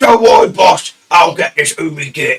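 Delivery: loud orc warrior character voice.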